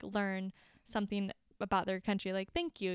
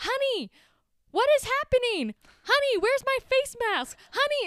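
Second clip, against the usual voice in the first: put-on high-pitched older lady voice, hollering loudly; 9 dB louder than usual. Retelling a woman on a flight talking loudly: imitating a woman yelling. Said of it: "yelling. ... talking the loudest I've ever heard".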